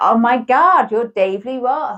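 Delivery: fake American accent, slow and drawn out. Acting out people's expected reaction at the door, in a put-on american accent. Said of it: "that's my American accent".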